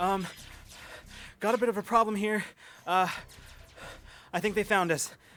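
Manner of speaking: panicked, panting. Voicing Jade calling over comms during a fight: panicked and panting. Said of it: "breathing heavy and, like, definitely panting, and a panicked edge to his voice".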